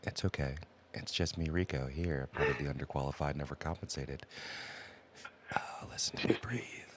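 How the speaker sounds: low, sultry ASMR voice. Co-host introduced as the sultry asmr voice greets listeners, sultry asmr voice. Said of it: "the sultry A S M R voice".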